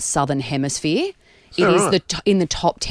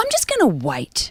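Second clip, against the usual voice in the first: deliberate, slow, stern, play-acted angry mother's voice; 8 semitones higher than usual. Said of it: "My angry mum voice".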